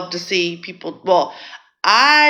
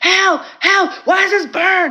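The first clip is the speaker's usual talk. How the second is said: mock desperate, very high-pitched yell; 13 semitones higher than usual. Retelling a man who put on the speaker's products, imitating him yelling for help. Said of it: "He's yelling. He's like".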